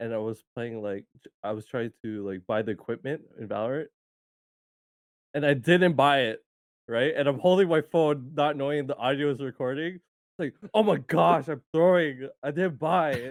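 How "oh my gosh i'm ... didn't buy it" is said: angry, mad voice, high and drawn-out. Recounting a voice message sent by accident mid-game, retelling own mad voice. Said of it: "with, like, a mad voice".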